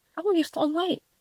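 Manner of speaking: high, mocking, singsong nosy busybody voice.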